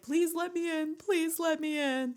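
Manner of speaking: mock crying, high, tearful begging. Retelling a movie scene of a girl at a door: imitating crying and begging. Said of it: "standing at the door crying, like, begging him".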